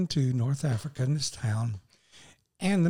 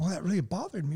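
normal talking voice

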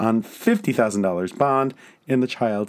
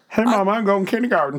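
put-on very high little-kid voice, pitch way up; 9 semitones higher than usual. Joking about a child's future voice, in a Gomer Pyle voice. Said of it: "Gomer Pyle".

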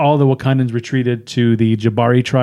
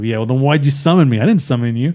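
normal talking voice

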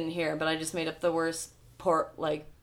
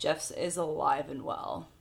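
put-on, dry, flat, expressionless deadpan delivery. Retelling how a detective answered someone asking whether a man was okay, mock-deadpan.

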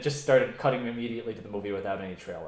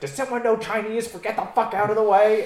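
put-on angry yell, higher and louder; 12 semitones higher, 9 dB louder than usual. Retelling a movie scene where Stanley Tucci yells at a woman: imitating Stanley Tucci yelling. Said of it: "yelling at this old".

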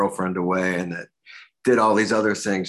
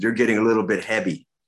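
put-on Korean accent; 3 semitones higher than usual. Retelling what a taekwondo instructor said: imitating instructor's Korean accent. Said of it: "that was his accent".

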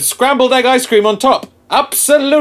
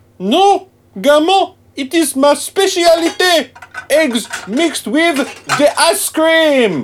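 put-on French chef accent, pitched up; 5 semitones higher than usual. Alph answers gammo's question about his cooking, in a fake french accent. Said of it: "why are you pretending to be French?".

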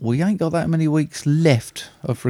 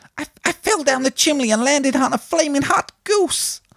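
very high, squeaky little cartoon mouse voice. Doing an impression in a guessing game, in a cartoon mouse voice. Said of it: "it sounded like Mickey Mouse".

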